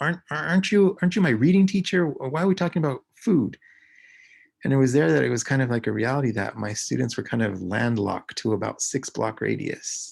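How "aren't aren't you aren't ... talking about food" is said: acted-out indignant, high, loud, angry voice. Reading teacher retelling a student's reply to his question, imitating an angry student. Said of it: "in an angry voice".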